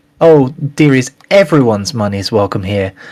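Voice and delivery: put-on, sweetest, syrupy, sugary voice. Retelling a woman who hurries over to the shopkeeper, mimicking her sweetest voice. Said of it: "in her sweetest voice".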